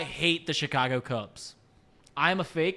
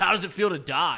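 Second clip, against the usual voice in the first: mock smug, condescending tone. Retelling how someone taunted them over their lost picks, mock-condescending. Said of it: "Trace looked at me condescendingly".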